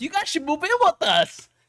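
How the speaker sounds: mock eager, high, wide sing-song voice.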